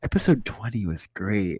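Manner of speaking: barely audible, very quiet, low-pitched murmur. Retelling what a kid holding the door said to the speaker, very quiet voice. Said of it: "in the most quiet voice ever".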